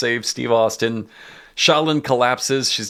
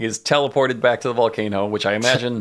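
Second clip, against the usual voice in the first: ordinary talk, nothing marked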